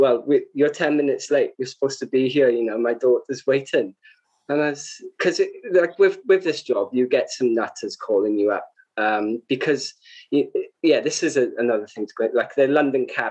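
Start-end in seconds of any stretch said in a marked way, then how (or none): none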